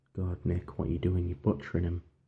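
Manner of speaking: ordinary delivery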